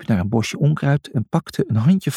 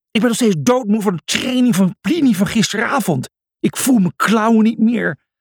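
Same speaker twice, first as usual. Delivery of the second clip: high, grumbling complaint; 7 semitones higher than usual. While the animals run panting to the fort, one of them speaks, complaining. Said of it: "klaagde Lucia".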